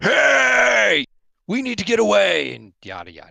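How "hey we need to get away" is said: very loud, high, rough booming shout, hey drawn out. Voicing a character who turns around, lifts his visor and starts shouting. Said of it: "and just start shouting".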